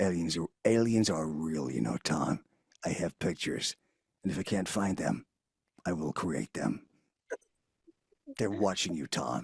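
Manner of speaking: very low, deep conspiracy-theorist voice. Game voice actor demoing an evening radio host, Harrison Wolf conspiracy voice. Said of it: "the conspiracy guy".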